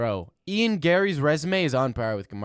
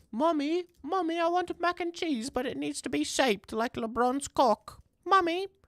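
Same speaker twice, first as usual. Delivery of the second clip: very high-pitched, put-on British accent; 4 dB quieter than usual. Reacting to shaped mac and cheese, playing someone asking Mommy, in a British accent. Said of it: "I'm doing a British accent".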